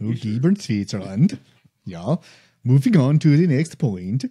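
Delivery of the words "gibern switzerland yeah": horrible, fake, put-on Norwegian accent. Joking around, saying a Swiss place name in a horrible Norwegian accent. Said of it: "horrible Norwegian accent".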